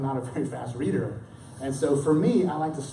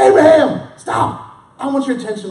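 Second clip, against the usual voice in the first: very loud, booming, thunderous voice; 12 semitones higher, 14 dB louder than usual. Acting out the angel crying out to stop the father, in a booming, loud, thundering voice. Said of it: "I think of this as a booming, loud, thundering".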